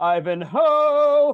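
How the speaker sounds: kooky, very high, very loud, drawn-out call. Retelling how the old English teacher would announce the book: imitating the old teacher. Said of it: "she would come in and she would say".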